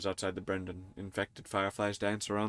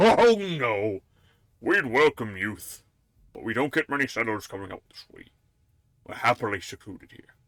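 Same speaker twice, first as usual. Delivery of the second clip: put-on raised, wise, wizened old village mayor voice; 6 dB louder than usual. Game narrator voicing the mayor answering about settlers: wise old mayor voice. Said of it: "the wise mayor takes you aside. / He grins conspiratorially. / The wizened mayor glances towards the town hall, / the wise mayor takes you aside. / He grins conspiratorially".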